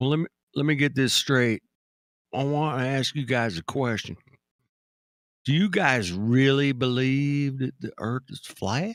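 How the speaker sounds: put-on, slow, drawn-out Southern accent. Imitating a caller in the politics server: put-on southern accent. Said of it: "Why'd you take on a Southern accent".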